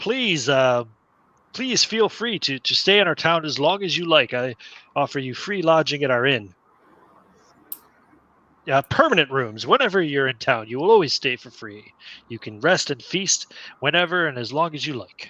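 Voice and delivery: nasal, nose-pinched voice, as through plugged nose. Narrator voicing a townsman greeting the listener's onion knight, nasal, holding his nose. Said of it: "kind of plugs his nose".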